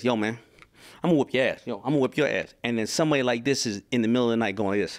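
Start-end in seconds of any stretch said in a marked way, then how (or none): 0.0-2.5 taunting, fighter-style trash talk. Imitating fighters trash-talking before a fight: imitating a fighter trash-talking. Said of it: "your fighters will be like this".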